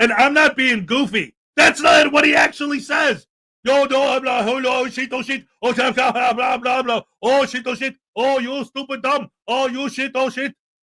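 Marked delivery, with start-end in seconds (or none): 3.6-10.5 fake put-on Arabic accent, quieter.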